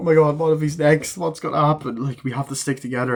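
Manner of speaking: weepy, distraught, tearful crying. Retelling a film scene outside a hospital, imitating characters crying. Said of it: "they're outside the hospital crying, like".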